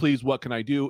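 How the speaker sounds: put-on screamed pleading. Telling a story of scaring a woman with a chainsaw, imitating someone screaming, begging. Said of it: "and she's screaming".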